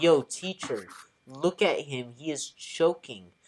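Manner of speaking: usual speaking voice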